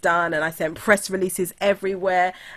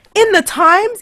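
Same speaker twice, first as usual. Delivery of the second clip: shrill, very high, very loud excited scream; 14 semitones higher, 11 dB louder than usual. Retelling getting off the phone after hearing the news: imitating her own scream. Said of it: "I was screaming like".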